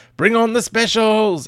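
very high, loud shout. Reading out a written line that ends in an exclamation mark, yelled. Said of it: "That's why I yelled it like that".

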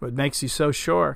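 plain reading voice

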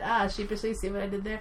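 plain

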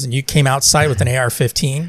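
ordinary talk

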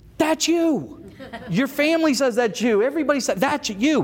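firm, insisting voice.

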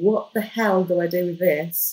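plain

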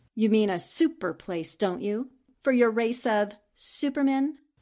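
sarcastic, mocking retort. In a drama, answering another character's claim, with a sarcastic jab. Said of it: "There is no need for sarcasm".

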